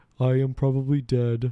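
put-on alien voice. Riffing with a listener, doing a line in the Battlefield Earth alien voice. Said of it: "It's the fucking Battlefield Earth guy".

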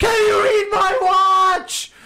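very high, very loud, shrill screaming. Retelling a friend's line shouted out a car window: imitating someone screaming. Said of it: "I hear my friend screaming at the top of his lungs".

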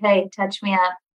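ordinary delivery

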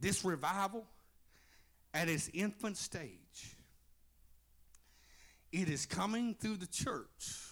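very slow delivery. Speaker addressing the congregation, saying this real slow. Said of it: "I'm gonna say this real slow".

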